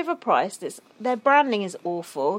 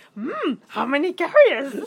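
high, pitched-up fake machine voice; 5 semitones higher, 4 dB louder than usual. Joining in, imitating the self-checkout machine's voice: fake Yoda voice. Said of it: "They got this fake Yoda voice on this self-checkout".

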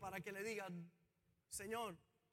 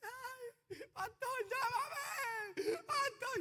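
mock high, drawn-out crying wail; 6 dB louder than usual. Pastor recounts a voice message from José after landing, imitating José's crying moan. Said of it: "Pero era un gemido de adentro".

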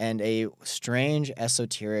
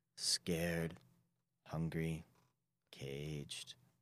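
very deep, ethereal voice echoing from beyond; 5 semitones lower, 12 dB quieter than usual. Voicing an aboleth creature speaking to a player: very deep ethereal voice. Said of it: "a very deep and kind of, like, ethereal voice".

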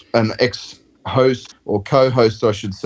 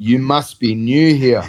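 put-on deadpan delivery; 3 semitones higher than usual. Retelling what he said to her: imitating a deadpan delivery. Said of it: "he deadpanned her and goes".

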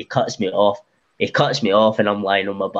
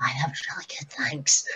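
breathy whisper, barely getting words out, struggling; 5 semitones higher, 8 dB quieter than usual. Retelling thanks after the match, throat stomped: imitating struggling to talk. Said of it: "Pure struggling to talk".

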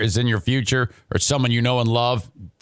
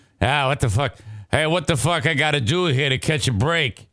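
deliberately bad New York accent; 3 semitones higher than usual. Retelling a man's reaction to his second destroyed property, in a bad New York accent. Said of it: "I don't even know if that's a good accent".

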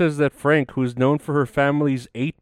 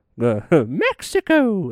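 put-on high, swooping video-game character voice, pitch swinging; 5 semitones higher than usual. Commenting on the news, doing a Mario impression. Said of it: "That's my Mario saying Mexico impression".

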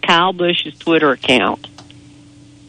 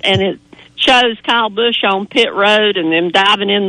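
normal talking voice

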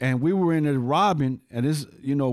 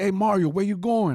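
casual, high, called out across distance; 6 semitones higher than usual. Retelling calling out from lookout to someone leaving: retelling a yell. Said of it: "I yelled at him".

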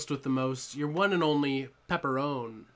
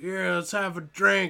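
put-on drunken slurred talk, higher pitched; 4 semitones higher, 3 dB louder than usual. Retelling meeting a really drunk guy at the door: imitating a drunk man. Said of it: "this really drunk guy's like".

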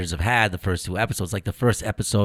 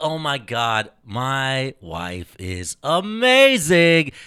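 mock gushing, fawning tone, higher pitch; 5 semitones higher, 4 dB louder than usual. Acting out a husband praising his wife so she overhears: imitating a husband sucking up. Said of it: "He's just scoring brownie points".

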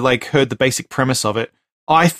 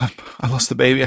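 put-on tearful crying voice. Retelling a film scene where the character tears up: imitating Kiefer Sutherland crying. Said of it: "crying, he tears up and he's like".

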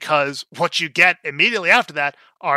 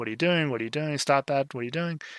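put-on drunken tone, quieter and faster; 8 dB quieter than usual. Retelling what was said to a man caught in the act, imitating a drunken tone. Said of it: "in this whole kind of uh drunken tone".

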